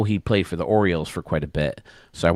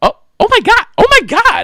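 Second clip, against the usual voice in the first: shrill, very high-pitched, loud, swooping cry; 13 dB louder than usual. Retelling his wife exclaiming while he livestreams, imitating her really high-pitched voice. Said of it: "in a really high pitched voice".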